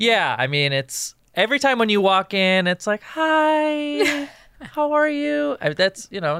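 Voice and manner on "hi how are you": very high, very slow, drawn-out long hi. Asked to imitate another speaker greeting on arrival: imitating a friend's greeting. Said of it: "it's not a great impression".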